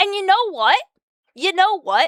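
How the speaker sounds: fed-up, angry ranting. Mid-rant about a subpar game version, speaking angry. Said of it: "I'm just angry today".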